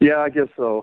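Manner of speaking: deflated, beaten, resigned voice. Answering whether ready to get her on the phone: sounding defeated. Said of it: "you sound so defeated".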